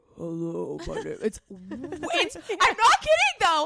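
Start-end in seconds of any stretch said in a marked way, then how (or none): 0.2-1.2 put-on unexpectedly deep voice. Imitating how a certain woman sounds, imitating a woman's deep voice. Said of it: "speak in a deep voice".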